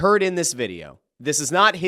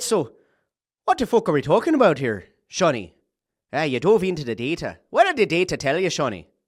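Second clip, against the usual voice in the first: put-on Irish accent. Speaker voicing McDermott questioning Shawnee about the data; Irish accent as McDermott. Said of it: "Should I go Irish?".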